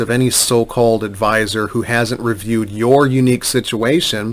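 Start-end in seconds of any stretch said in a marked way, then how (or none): none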